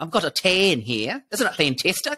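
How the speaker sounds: Australian-New Zealand accent, including on tan. Praising the other speaker's accent, the speaker mimics their mother-in-law: imitating Aussie-New Zealander accent. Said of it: "that's how my mother-in-law says tan".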